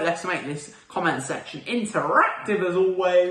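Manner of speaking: voice cracking, breaking on a word. Wrapping up a video, asking viewers to comment, voice crack. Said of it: "What the hell was that voice crack?".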